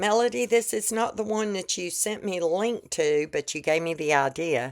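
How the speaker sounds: ordinary delivery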